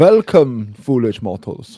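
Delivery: loud, booming voice with a German accent. Greeting the others on the ride: Haunted Mansion ghost host voice, German accent. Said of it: "Why are you being the Haunted Mansion ghost host, but German?".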